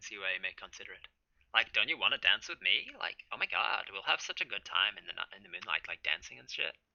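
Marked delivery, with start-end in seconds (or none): 1.5-6.7 witch voice in put-on valley girl style. Retelling how the witch became a valley girl: imitating a valley girl witch. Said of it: "become a valley girl".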